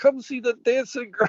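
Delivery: put-on very high old-fashioned carnival barker call. Describing how an announcer sounds, the speaker does an old carnival guy voice. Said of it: "sounds like the old guy at the the carnival".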